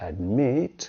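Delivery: admit with stress on second syllable mit. Teaching when to double consonants: stress on second syllable of admit. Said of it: "has the stress on the second syllable".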